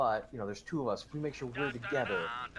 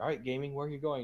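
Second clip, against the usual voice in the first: put-on heavy, super thick French accent, laid on thick; 2 semitones higher than usual. Retelling what a director said to him during a game, in a super thick French accent. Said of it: "super thick French accent".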